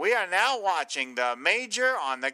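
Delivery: put-on old newsreel narrator voice, old-time announcing style. Speaker recalling a MASH scene, doing Hawkeye's funny voice. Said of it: "do this funny voice where he's like".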